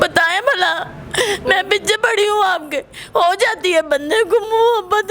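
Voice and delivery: crying, tearful pleading voice.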